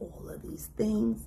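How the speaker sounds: soft, unvoiced whisper.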